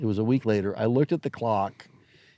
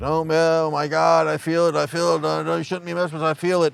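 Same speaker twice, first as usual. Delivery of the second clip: put-on high, pitched-up hollering; 6 semitones higher than usual. Retelling what a seance sitter yelled after falling back: imitating someone yelling. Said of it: "he started yelling, like".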